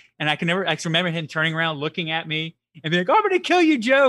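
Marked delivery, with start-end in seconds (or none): 3.1-4.1 very high, loud voice breaking into laughter. Retelling a friend's words on his first roller coaster: imitating a friend laughing. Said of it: "But he was, like, laughing".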